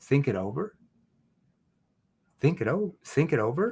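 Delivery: puzzled, confused echo with questioning tone. Showing how to answer a prospect's objection: confused tone. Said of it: "I can say in a confused tone".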